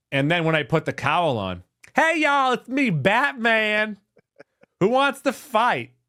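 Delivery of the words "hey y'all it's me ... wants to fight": flamboyant, high-pitched, slow, drawn-out voice. Showing how they'd talk once the Batman cowl goes on, zesty Batman voice. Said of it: "He's just a zesty Batman".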